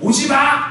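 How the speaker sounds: loud shouting at a high pitch.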